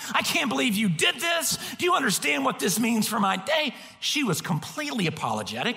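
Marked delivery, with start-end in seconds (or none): 0.1-3.7 put-on high, childish, huffy, petulant rant. Speaker retelling how they ranted at a woman, retelling a petulant huffing rant. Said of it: "I turn into a petulant child. I am huffing. I am ranting".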